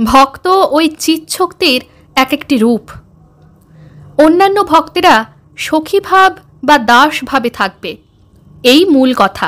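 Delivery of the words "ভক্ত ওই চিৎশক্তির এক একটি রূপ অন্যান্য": ordinary delivery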